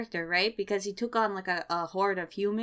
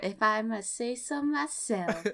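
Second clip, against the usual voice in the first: put-on Southern US accent. Repeating a co-host's phrase back to them, in a put-on southern accent. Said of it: "with a southern accent right there".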